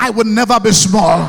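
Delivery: excited, eager tone. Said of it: "You guys are not saying it well".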